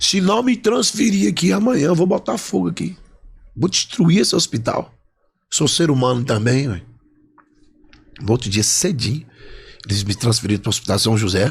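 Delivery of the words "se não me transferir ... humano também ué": high, loud hollered shout. Retelling threatening hospital staff to get transferred: retelling his own shout. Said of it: "Aí eu gritei lá".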